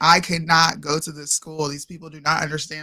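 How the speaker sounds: ordinary talk, nothing marked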